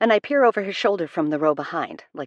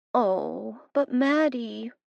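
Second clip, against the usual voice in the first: put-on high, cloying, sickeningly sweet baby talk; 7 semitones higher, 3 dB quieter than usual. The narrator answers Matt's grumble: sickeningly sweet baby voice. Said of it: "in a sickeningly sweet baby voice".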